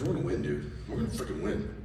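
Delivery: low, soft, hushed encouraging tone.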